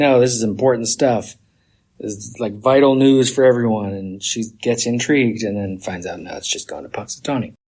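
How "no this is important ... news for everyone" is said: normal talking voice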